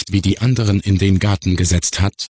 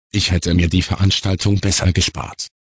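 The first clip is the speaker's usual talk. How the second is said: ordinary talk, nothing marked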